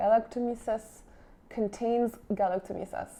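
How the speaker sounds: galactomyces with French pronunciation. Reading an unfamiliar ingredient name from a skincare product: French accent. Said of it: "I say it with my French accent".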